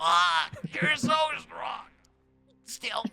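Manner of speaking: very high, creaky put-on character voice. Voicing Basil hugging a player back: voicing Basil. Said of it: "he hugs you back".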